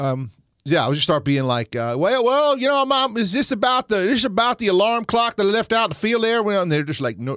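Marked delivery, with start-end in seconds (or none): 1.7-6.4 put-on heavy Southern accent, much higher, louder. Retelling what they say when Mom calls, put-on Southern accent. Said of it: "I'll get real Southern real quick".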